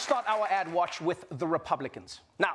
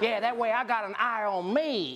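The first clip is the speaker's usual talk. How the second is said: thick, slow, put-on Southern American drawl; 4 semitones higher than usual. Speaker mocking the endless call for more cops, in a Southern accent. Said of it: "(SOUTHERN ACCENT)".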